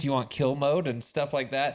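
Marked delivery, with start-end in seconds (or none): 0.0-0.9 put-on female ai voice, higher pitch. Comparing a movie to Spider-Man's suit, imitating the suit's lady voice. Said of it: "with the, like, lady voice, and she's like".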